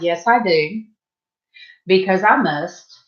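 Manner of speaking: ordinary talk, nothing marked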